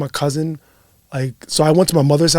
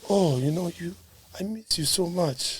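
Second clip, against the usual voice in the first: put-on soft, teary old-man voice, close to crying. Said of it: "he sounds like he's about to cry".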